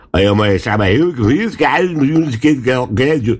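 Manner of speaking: thick, laid-on Bavarian dialect.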